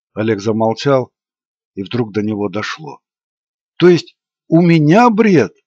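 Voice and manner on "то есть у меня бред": abrupt, high, sudden exclamation. Oleg falls silent, suddenly understands, and speaks up, exclaiming. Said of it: "воскликнул он".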